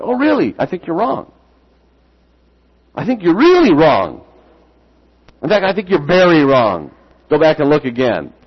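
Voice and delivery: playful teasing, mock-stern. Recounting a talk with a man back from reading about creation, retelling his own teasing. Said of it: "I was teasing him".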